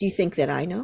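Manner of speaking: put-on icy, superior, condescending, nasty tone. Retelling his reply to the speaker's question, in a mock cold, condescending voice. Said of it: "in the coldest, most condescending, nastiest voice".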